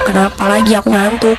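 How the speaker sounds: ordinary talk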